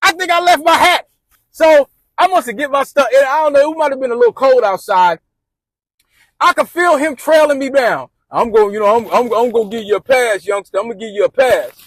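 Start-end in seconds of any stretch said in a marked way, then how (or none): 8.3-11.7 acted wounded, salty, sulky voice.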